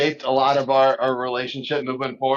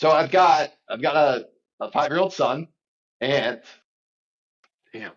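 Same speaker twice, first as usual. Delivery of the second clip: overcome, halting, emotional, broken phrases. Telling a personal story, the speaker starts getting emotional. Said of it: "I didn't think I'd get emotional".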